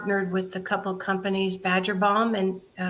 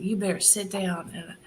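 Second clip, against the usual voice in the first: imitated thick Texas accent. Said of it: "with this real thick accent".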